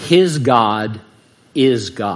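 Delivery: very slow, low, every word distinct. Quoting the defeated Pharaoh's line as Yul Brynner said it, slow and distinct. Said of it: "says slowly and distinctly".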